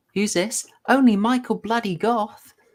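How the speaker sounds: high, jeering, thoroughly sarcastic taunting tone. Retelling a film scene where the doctor character taunts: imitating Bill Pullman mocking. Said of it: "he starts off mocking".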